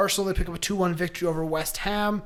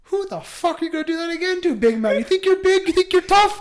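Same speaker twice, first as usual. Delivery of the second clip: put-on Irish accent, pitched up; 10 semitones higher than usual. Retelling what a player said on the field mic: imitating Seamus Coleman's Irish accent. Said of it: "His Irish accent goes".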